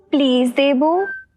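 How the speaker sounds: very sweet, sugary, syrupy tone. Asked to say please softly and from the heart, she says it in a very sweet tone. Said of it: "कितना मीठा please था।".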